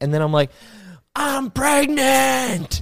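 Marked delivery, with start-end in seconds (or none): 1.1-2.8 put-on yell, pitched very high. Speaker recalls a story about themselves pushing tint, retelling a yell. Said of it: "And I'm just yelling it".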